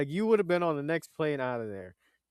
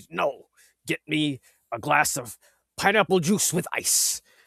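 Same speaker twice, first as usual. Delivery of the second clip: mock firm, no-nonsense, adamant and insistent; 4 dB louder than usual. Retelling how he demanded pineapple juice: imitating an adamant demand. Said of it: "He was so adamant about".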